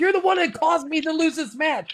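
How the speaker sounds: put-on yell, pitched very high. Retelling a wrestler's outburst at another wrestler, imitating someone yelling. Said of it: "and he was yelling".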